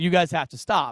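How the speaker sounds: nasty, stern, harsh and mean tone. Retelling how a priest told some guys to stop: imitating a priest speaking meanly. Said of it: "He said it really meanly".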